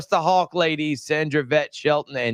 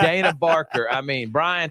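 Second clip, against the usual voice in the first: ordinary delivery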